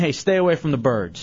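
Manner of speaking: plain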